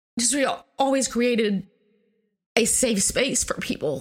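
emotional, choked up, catch in the throat. Talking about the mom who made their home open to friends; choked up. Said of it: "I'm getting a little choked up".

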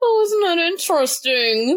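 forced calm through clenched teeth, very high pitch. Showing their fake-zen reaction to a frustration, through gritted teeth. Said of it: "through gritted teeth".

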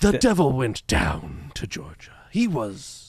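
poor put-on British accent, slow and swooping. Asked to try a British voice, the speaker attempts the lyric anyway: bad British accent attempt. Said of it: "I'm bad at British accents".

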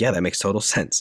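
ordinary delivery

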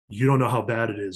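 grave, serious voice. Retelling a phone call about the attack: imitating Kevin turning serious. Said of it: "he got all serious".

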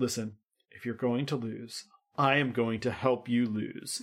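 heartfelt, very earnest, dead-sincere delivery. Retelling how a character leans in to offer help: imitating an earnest plea. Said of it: "leans in very earnestly and goes".

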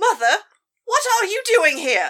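put-on British accent. A character in a scene addresses their mother; fake British accent. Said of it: "fake British accent isn't fooling anyone".

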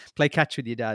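plain

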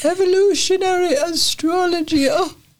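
English accent in a very high voice. Speaker tries saying a phrase in an english accent, as suggested. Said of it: "Try saying it in an English accent".

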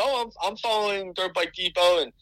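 put-on Southern accent. Retelling what a man said to the team, in his southern accent. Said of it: "he goes in his southern accent".

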